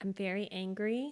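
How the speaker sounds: quiet voice. Giving a last statement about being angry: soft-spoken. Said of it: "you are very soft-spoken right now".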